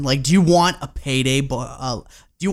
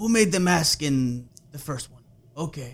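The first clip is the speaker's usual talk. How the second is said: put-on Spanish accent; 4 dB quieter than usual. Voicing a film producer's question, in a put-on Spanish accent. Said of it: "I don't know why I'm doing like a Spanish accent right here".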